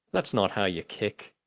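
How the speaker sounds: ordinary delivery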